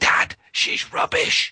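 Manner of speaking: small, half-whispered, loud little stage whisper. Retelling what a child said during an investigation: imitating a child's whisper. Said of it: "this little voice to one side of me whispered".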